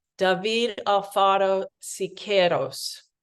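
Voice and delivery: careful, best-effort Spanish pronunciation. Pronouncing a muralist's name as correctly as possible: attempted Spanish accent. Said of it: "That was the best I could do on that Spanish accent".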